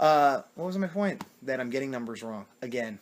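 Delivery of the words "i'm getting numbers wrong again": ordinary talk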